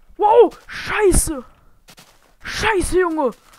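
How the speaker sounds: startled, high, loud, panicked cursing.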